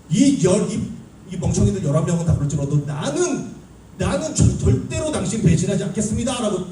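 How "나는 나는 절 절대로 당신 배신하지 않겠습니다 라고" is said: boastful, higher voice. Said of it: "호언장담을 했잖아요".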